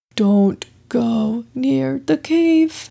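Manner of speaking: panicked, frightened, alarmed whisper. Binyamin Bat, having flown into Beaver Baji, speaks in a panicked whisper. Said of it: "said in a panicked whisper".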